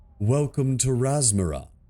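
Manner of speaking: patronizing, condescending, talking-down tone. An unseen speaker greets the commander after he comes through a portal, in a condescending voice. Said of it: "comes a condescending voice".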